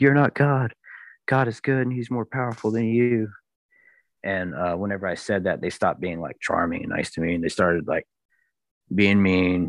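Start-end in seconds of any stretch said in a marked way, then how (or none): 0.0-3.3 high, contained scream. Recounting a confrontation with entities, reenact screaming at them. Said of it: "but I screamed".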